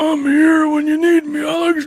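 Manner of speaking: voice pushed very high, put-on high pitch. Showing how the voice of a man you have never met goes, in an impression of Steve. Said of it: "His voice goes like this".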